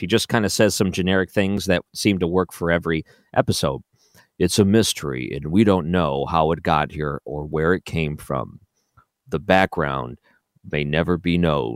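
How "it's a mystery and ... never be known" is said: low, deep TV announcer voice. Mocking a show narrator's generic lines, in a History Channel announcer voice. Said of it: "in his best announcer voice".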